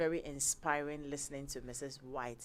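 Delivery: ordinary delivery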